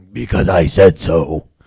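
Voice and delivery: lowest pitch, very loud, deep, booming scary voice. Demonstrating what a parent tells kids, in the lowest booming, scary voice. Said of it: "you try to use that lowest voice, you know, that booming, scary thing".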